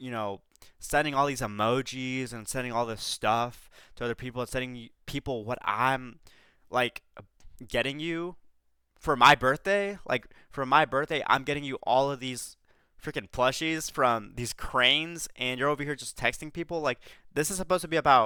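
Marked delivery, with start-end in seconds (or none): none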